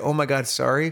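mocking, funny-sounding delivery. Retelling how the other speaker apologized, imitating a funny-sounding apology. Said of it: "you said it in a funny way that was like".

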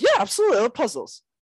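really excited, eager, high, quick burst. Retelling how she answered a question about puzzles, acting really excited. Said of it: "She gets really excited".

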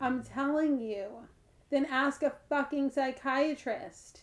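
very slow, mad, angry tone. Answering another speaker's repeated questions about the ego, sounding mad. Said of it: "Why are you so mad?".

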